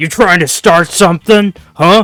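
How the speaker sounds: tough guy voice. Narrating the scene, voicing the bruiser after a drunk knocks drinks onto him. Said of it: "And the bruiser is like".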